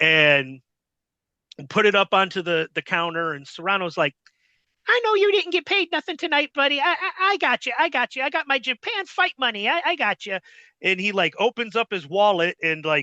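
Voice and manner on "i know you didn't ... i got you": squeaky, very high-pitched fighter voice. Retelling what Serrano said at the store counter: imitating Serrano's high-pitched squeaky voice. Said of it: "high-pitched, squeaky voice".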